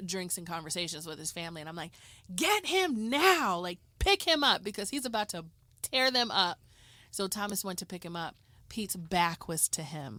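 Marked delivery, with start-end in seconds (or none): 2.3-6.6 loud, pitched-up yelling. Retelling yelling at someone to pick up the dog: imitating own yell. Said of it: "I'm yelling at Thomas".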